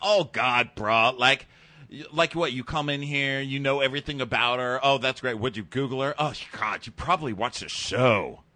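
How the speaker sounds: mock voice full of disgust, ribbing. Recounting what a man said to Derek, mimicking someone disgusted. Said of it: "He's all disgusted".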